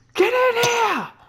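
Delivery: shouting. Calling the others in to eat after cooking, yelling to call others. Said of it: "how loud are you yelling?".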